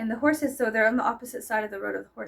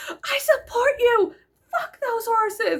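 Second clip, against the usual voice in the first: put-on very high, drawn-out scream, loud; 12 semitones higher, 6 dB louder than usual. Recounting a loud scene with horses, retelling their own screaming. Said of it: "I was just screaming and I was like".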